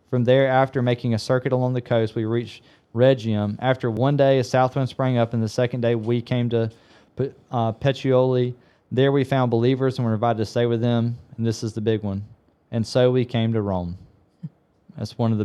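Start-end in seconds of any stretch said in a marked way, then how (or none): 11.3-15.4 choked-up voice catching with emotion. Talking about a favorite verse from Luke; choked up. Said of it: "I'm getting choked up talking about it".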